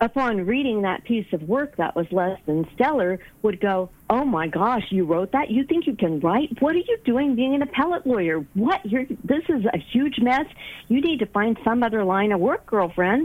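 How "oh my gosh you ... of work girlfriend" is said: nagging, critical inner critic voice. Voicing the inner saboteur reacting to a weak piece of work: inner saboteur voice. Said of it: "The saboteur voice".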